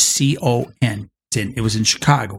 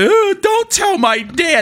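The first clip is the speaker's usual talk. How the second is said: put-on very high, slow, blubbering crying toddler voice; 4 dB louder than usual. Retelling a kid's plea after being caught: imitating a crying kid. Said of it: "starts crying like a little two-year-old".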